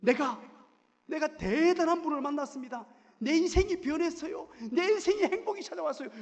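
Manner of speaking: high, loud, joyful shouting.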